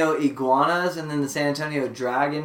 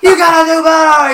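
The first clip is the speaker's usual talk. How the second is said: put-on yelling, higher and louder; 13 semitones higher, 13 dB louder than usual. Retelling how a fan next to them yelled at the players: imitating someone yelling. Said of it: "yelling at the players".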